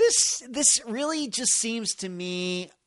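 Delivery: voice cracking. Explaining a personal view of a disappearance case, voice cracking. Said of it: "my voice cracking there".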